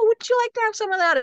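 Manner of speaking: tiny, very high, squeaky, tempting little voice. Voicing the temptation to eat junk food: squeaky little voice of temptation. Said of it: "the temptation does squeak its little voice".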